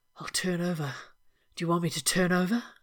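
softly murmured. Lying close, he speaks right into the other man's ear, murmured.

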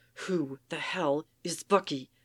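seething, venomous, angry hiss. Soldier, having stomped across the yard right at Captain, hissing. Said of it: "He hisses".

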